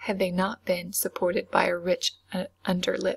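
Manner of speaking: plain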